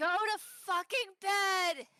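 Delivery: stretched-out high call, not loud. Yelling in character from down the hall at someone going to sleep: yelling down the hall. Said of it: "I'm gonna yell from the hall".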